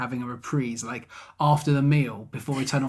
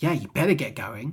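mock aggressive delivery. Retelling a character's line to the other speaker: imitating an aggressive line. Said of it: "really aggressive way".

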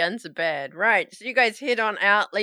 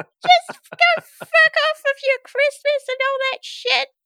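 shrill, very high, loud, shouting elf voice; 6 dB louder than usual. Narrating a scene, a little elf pokes out of a tree, yelling elf voice. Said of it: "And he yells out".

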